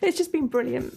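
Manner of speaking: tearful crying voice. Sharing good memories, crying. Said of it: "I'm crying again".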